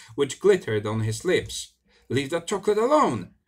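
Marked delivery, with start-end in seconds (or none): 2.1-3.2 shouting at high pitch. Pulling the foot of a man eating his chocolate, the narrator is yelling. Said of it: "I yelled".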